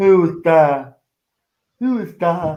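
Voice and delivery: slow, dim-witted put-on dumb voice. Mocking a reaction to someone laughing sinisterly, in a put-on dumb voice. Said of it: "That's why I put on the dumb voice".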